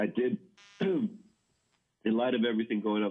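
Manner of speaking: words caught on a choke, choking while talking. Explaining a gift decision to clients while choking on saliva. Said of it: "I'm choking on my own saliva".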